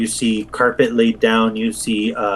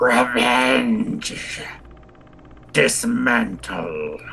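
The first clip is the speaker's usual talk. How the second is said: choked, strangled creature cry; 4 dB quieter than usual. Storyteller voices a creature calling out from the darkness: strangled creature call. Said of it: "call from the darkness with a strangled voice".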